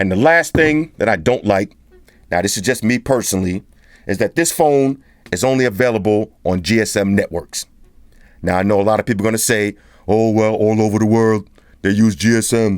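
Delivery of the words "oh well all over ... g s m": put-on deep, mocking, scornful voice. Reviewing a phone, voicing people who will object, in a deep hater voice. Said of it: "when y'all hear that deep voice like that, that's the hater's voice".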